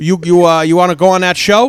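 put-on Pennsylvania accent. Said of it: "this strong Pennsylvania accent".

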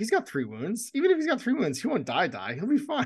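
high, breezy, cocky, overconfident voice.

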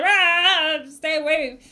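tentative, half-hearted shout with drawn-out ah. Game narrator voices a character calling out into the bushes, sort of shouting. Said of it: "You sort of shout into the bushes".

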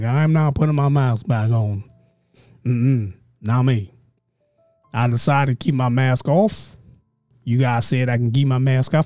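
rural country-sounding voice. Imitating the Kens and Karens of the world, in a put-on country accent. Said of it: "I'm making them sound country".

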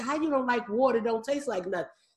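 ordinary talk, nothing marked

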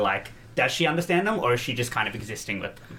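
usual speaking voice

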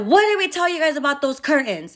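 play-acted high, shouted scolding. Retelling scolding two boys over the curtains, retelling yelling at kids. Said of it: "I yelled at both of them".

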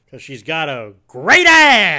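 very loud, slow, swooping belted outburst. Speaker asks if they've heard his Heat impersonation, then does Al Pacino impression. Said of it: "have you heard my Al Pacino and Heat impersonation?".

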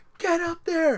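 mock, very high, loud shrieking scream. Retelling Jen cheering the speaker on during the race, retelling Jen screaming. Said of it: "and she's screaming".

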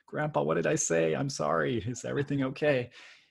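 put-on high, creaky, timid, obedient little child voice. Retelling what they asked a tearful grandfather as a kid: imitating own shy child voice. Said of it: "a little shy, like, really obedient".

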